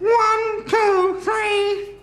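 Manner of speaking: high nasal voice. Demonstrating a voice step by step, counting to three, pitched-up nasal voice. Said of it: "Let's just add a bit of nasal now".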